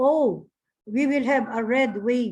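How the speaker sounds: normal talking voice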